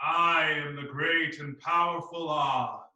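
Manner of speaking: speaking from the chest. Leading a voice exercise, in a resonant chest voice. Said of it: "feel it resonate from the chest voice".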